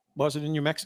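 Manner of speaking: ordinary talk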